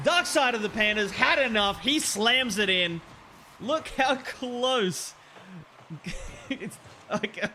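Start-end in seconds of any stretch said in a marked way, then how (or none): 6.5-7.5 laughing hard, cracking up. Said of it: "I'm just cracking up".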